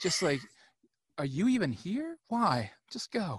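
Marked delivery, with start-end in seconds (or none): 1.2-3.4 put-on genteel, cutting voice, pitched higher. Retelling a film scene, the speaker quotes Doc Holliday dismissing a man, mock-condescending. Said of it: "So condescending".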